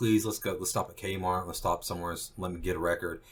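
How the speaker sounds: usual speaking voice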